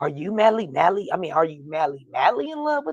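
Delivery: swooping, sing-song, clowning, mocking teasing tone. Retelling how the others were clowning Jared: imitating mocking teasing. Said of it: "they all kinda clowning him like".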